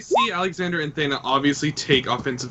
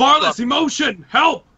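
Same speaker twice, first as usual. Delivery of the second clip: very high, shrill, loud yell; 11 semitones higher, 6 dB louder than usual. Calling out in character to an ally during a fight: yelling for help. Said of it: "I'm gonna yell".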